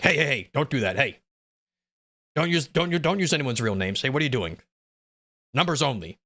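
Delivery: put-on stern, displeased judge voice. Retelling how a judge stopped the defense from naming a juror, imitating an unhappy judge. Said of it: "the judge was not happy about it".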